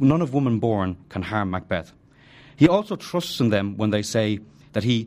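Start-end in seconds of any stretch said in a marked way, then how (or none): none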